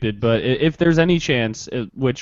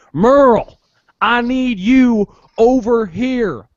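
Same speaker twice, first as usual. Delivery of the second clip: loud, very high, very slow Southern drawl yell; 12 semitones higher, 6 dB louder than usual. Showing how to do a Walking Dead impression, Walking Dead Southern yell. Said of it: "you yell out a name in a Southern accent".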